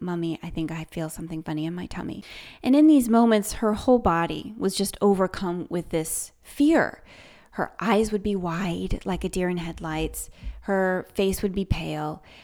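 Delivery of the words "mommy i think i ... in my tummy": put-on very serious tone, quieter, faster. A mother retells what her daughter would come up and say, imitating a very serious tone. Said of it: "say in this very serious tone".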